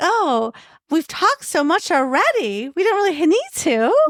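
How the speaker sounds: bright, perky tone. Retelling the speaker's own reply to a man who insisted they talk, imitating a perky tone. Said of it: "the perkiness that I just had".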